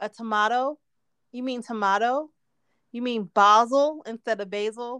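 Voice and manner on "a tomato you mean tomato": ordinary delivery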